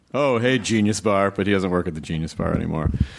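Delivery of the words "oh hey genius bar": normal talking voice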